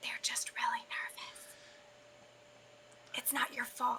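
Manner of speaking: soft whisper, very close to the ear. Voicing a character who whispers to another while walking: whispering in someone's ear. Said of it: "Karis kinda whispers in her ear".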